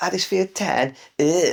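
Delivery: imitated thick Southern accent. Retelling what a passing bloke said in a bar: imitating a thick southern accent. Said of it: "with thick Southern accent going".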